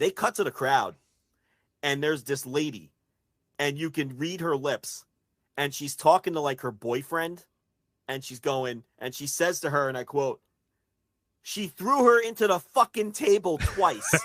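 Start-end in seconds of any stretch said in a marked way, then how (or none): 11.4-14.1 put-on Boston accent, loud and high. Quoting a lady in the crowd talking to her boyfriend: Boston accent. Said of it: "With the Boston accent".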